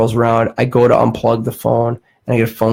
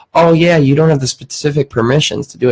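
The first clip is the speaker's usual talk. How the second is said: ordinary delivery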